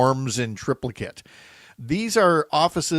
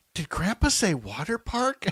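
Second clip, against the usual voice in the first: put-on tiny, small, high, soft little child's voice; 6 semitones higher, 5 dB quieter than usual. Retelling a child asking from the back seat, in a little five-year-old voice. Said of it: "this little five year old voice from the back seat".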